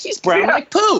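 put-on very high little kid voice.

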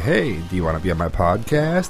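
creepy-toned, unsettling delivery. Retelling how a podcaster greets strangers online: creepy tone imitating Scott the Pool Boy. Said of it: "he just has this kinda creepy tone".

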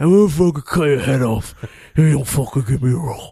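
put-on British accent. Joking about the casting of Machete, Danny Trejo impression sounding British. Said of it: "Why does he sound British?".

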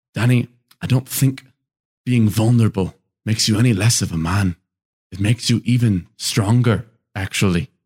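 put-on Scottish accent throughout. Retelling what Ewan McGregor said to him in that moment, Ewan McGregor Scottish accent. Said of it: "Good accent too".

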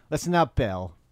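loud assertive voice. Retelling a sitcom scene where Matthew asserts himself: Andy Dick impression. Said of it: "I can't do Andy Dick as well as Jason".

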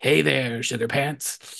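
put-on gravelly superhero voice.

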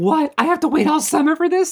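high-pitched screaming. Retelling reacting to a to be continued cliffhanger: imitating own past screaming.

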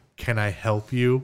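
mock, subtly hostile, thinly veiled unfriendly tone. Retelling how a store owner greeted him from across the shop: imitating a subtly hostile shopkeeper. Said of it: "but really get the hell out of my store voice".

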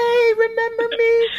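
very high, loud, tiny, shrill cutesy call. Voicing George greeting the writer in a dream: George character voice. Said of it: "You've got the voice where it's like".

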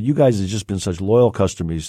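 ordinary delivery

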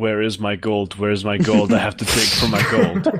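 usual speaking voice

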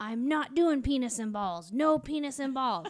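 put-on full-volume, very loud, angry child screaming. Retelling a child's angry outburst after a talk about body parts: imitating Evan screaming. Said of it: "starts screaming through the house".

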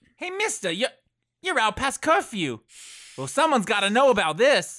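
high-pitched street urchin voice. Voicing a street kid who catches an adventurer out past curfew: street kid character voice. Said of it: "he says".

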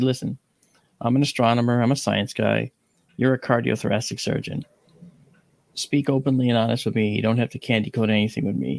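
normal talking voice

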